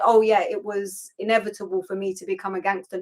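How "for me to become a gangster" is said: ordinary talk, nothing marked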